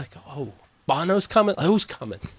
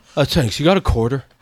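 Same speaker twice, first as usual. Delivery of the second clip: mumbled, drooling speech; 2 semitones lower, 3 dB louder than usual. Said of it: "drools all over himself, [name], and mumbles".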